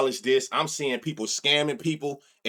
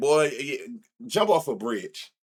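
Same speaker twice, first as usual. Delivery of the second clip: mock amused, slow, laughing tone. Retelling a reply to a person who misread the bets: retelling own laughing reply. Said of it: "I'm just laughing like".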